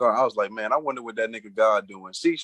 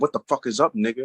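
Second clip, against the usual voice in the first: hot-tempered, angry, heated outburst. Retelling what was said on the phone while heated: retelling an angry, heated line. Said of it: "I'm mad, I'm heated".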